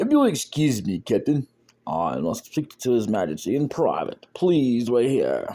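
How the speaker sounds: made-up random character voice with swooping pitch. Reading the lines of a guy you don't care about to a Captain, in a little random character voice. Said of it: "I give him a little random voice".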